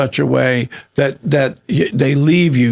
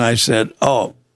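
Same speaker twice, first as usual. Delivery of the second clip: ordinary talk, nothing marked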